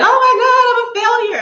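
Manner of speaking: put-on, very high, loud sobbing outburst. Retelling breaking down in front of her mom: retelling crying outburst. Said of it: "bursting out, crying".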